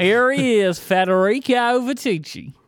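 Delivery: put-on Southern accent, very high pitch. Asked for a Southern accent, introducing the guest in a Southern accent. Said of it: "Can you do a Southern accent".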